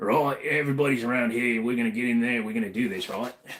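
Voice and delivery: fast, rattled-off, put-on Cockney accent. An American showing what happens when trying a British accent, do a Cockney Jason Statham impression. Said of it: "when I automatically try to do a British accent, I go Cockney".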